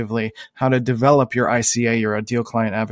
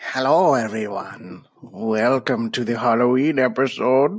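put-on elderly man voice. Opening the Halloween episode of the show in an old man voice. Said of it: "It's kind of just like an old man".

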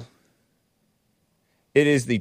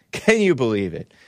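usual speaking voice

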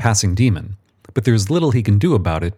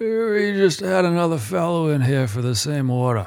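put-on high, croaky old demon voice; 7 semitones higher, 3 dB quieter than usual. A narrator reads an old demon's reply to Michael, croaking. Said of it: "and croaks".

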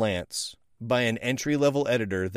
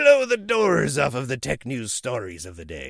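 swooping put-on pirate accent, laid on. Speaker describing a tech journalism job listing, pirate voice. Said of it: "I don't know why you have to go into a pirate voice for that".

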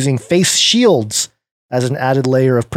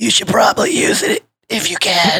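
bad, half-hearted put-on official voice, pitched up; 6 semitones higher than usual. Reading a news quote, then trying an Anthony Fauci impression. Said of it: "let me try a Fauci impression".

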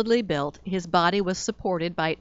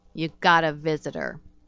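short, curt, terse growl; 2 semitones lower than usual. The receptionist, packing up for the day, speaks to the narrator: growling. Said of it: "she growled".

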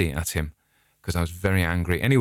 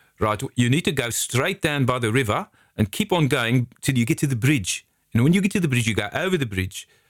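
put-on South African accent, pitched up; 5 semitones higher than usual. Retelling a psychiatrist's directions to the bridge: imitating a South African accent. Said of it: "who's South African".

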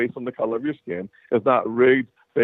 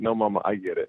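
put-on sarcasm, lower and quieter; 3 semitones lower, 5 dB quieter than usual. Recalling answering mama after flunking out, retelling a sarcastic reply. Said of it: "I said it with some sarcasm in my voice".

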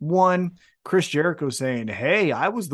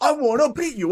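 put-on yell, pitched higher; 10 semitones higher than usual. Retelling how a wrestler cut his promo: imitating Ospreay yelling. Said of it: "just yell".

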